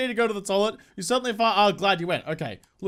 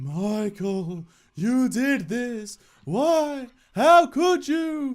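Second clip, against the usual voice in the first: put-on high-pitched, spooky ghost voice; 5 semitones higher than usual. Voicing the ghost Abigail speaking to Michael, in Abigail's ghost voice. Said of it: "Do you like my ghost voice".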